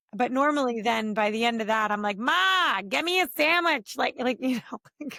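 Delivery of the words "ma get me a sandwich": put-on heavy, big, drawn-out Philadelphia accent. Telling of visits to her mother's house, quoting herself to her mother: big Philly accent. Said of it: "pretty big in the Philly accent".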